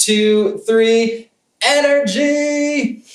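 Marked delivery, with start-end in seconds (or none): 1.6-3.0 shouting. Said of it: "Shout it for me".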